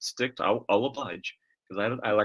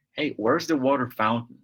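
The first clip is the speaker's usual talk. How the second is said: put-on heavily laid-on Midwestern accent; 3 dB louder than usual. Recalling a first day in the United States, trying to sound Midwestern. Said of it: "I was trying to sound very Midwestern".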